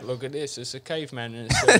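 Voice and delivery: very bad put-on German accent, sing-song. Retelling what mom would say about a museum display: worst german accent. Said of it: "That's the worst German".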